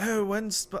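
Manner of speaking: clumsy fake Irish accent. Retelling a friend's question about a release date: bad Irish accent. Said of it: "I can't do an Irish accent".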